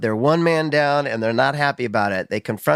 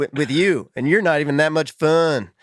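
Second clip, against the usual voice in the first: put-on very strong, thick Texas accent; 3 semitones higher than usual. Fan retelling a line from a car scene, imitating Jensen's Texas accent. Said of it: "It's very Texas".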